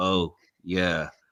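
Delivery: dead-level, flat, low deadpan monotone. Retelling the scene where John Wick stares at the puppy, John Wick flat monotone. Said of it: "gives the most flat monotone".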